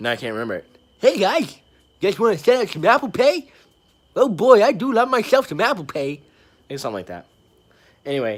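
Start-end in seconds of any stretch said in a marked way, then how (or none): 1.0-6.2 shrill, very high, booming, drawn-out goofy salesman voice. Retelling showing customers apple pay in a made-up goofy voice. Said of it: "I came up with this voice".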